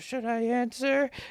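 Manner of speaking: weak, soft little voice. Retelling a preacher's deposition answer to his lawyer: imitating a frail voice. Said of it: "He's got this, like, frail voice".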